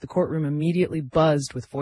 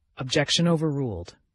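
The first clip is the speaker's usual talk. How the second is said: ordinary delivery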